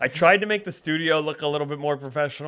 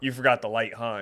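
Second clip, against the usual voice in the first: normal talking voice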